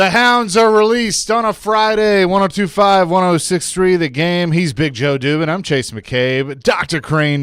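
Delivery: loud, high radio announcer delivery. Introducing the show and its hosts on air: radio announcer voice. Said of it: "My radio voice came out there".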